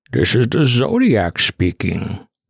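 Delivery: slow, drawn-out put-on voice with big pitch swoops. Speaking as the Zodiac again, as a joke: Bane voice. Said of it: "doing the Bane voice as the Zodiac".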